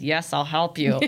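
spoken through gritted, clenched teeth. Speaker imagining a caller needing help on a day off: acting out gritted-teeth reply. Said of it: "I'll be like gritting my teeth".

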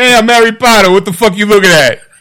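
put-on thick, laid-on New York kid accent. A seven-year-old from New York cast in the role: New York kid as Harry Potter. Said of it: "I'm a 7 year old from New York".

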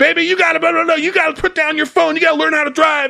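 mock, frantic, rapid, shrill screaming, very high and rough. Retelling a roadside argument, a woman at her boyfriend: retelling a woman screaming at boyfriend. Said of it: "these two people screaming at each other".

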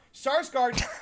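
shouted nonsense sounds.

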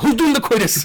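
loud, high hollered call. Acting out calling through the vents at neighbours: pretend loud calling out. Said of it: "I say it very loudly".

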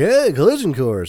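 bad talk-show host voice, belted out high and loud. Retelling a talk show moment: bad Johnny Carson impression. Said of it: "That was a bad Johnny Carson impression".

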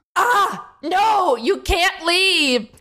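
very high, shrill shout. As another person says they will leave, the speaker stops them, shouting. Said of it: "could you stop shouting?".

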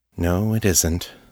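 soft, low volume. A man answers another man's remark, quietly. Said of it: "Michael said quietly".

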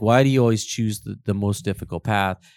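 ordinary talk

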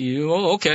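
startled, taken-aback speech, broken off and faltering. Retelling a man's reply after being caught off guard: imitating a taken-aback man. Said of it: "he was so taken aback".

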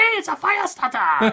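exaggerated cartoon Canadian accent, very high and loud. Describing Canadians joking with each other, in a South Park Canadian accent. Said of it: "they're talking like that to each other".

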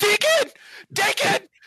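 very high-pitched screaming. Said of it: "Bouncing Betty screams".

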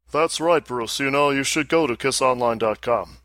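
arrogant put-on rock star voice. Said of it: "I think I'm gonna use this voice".

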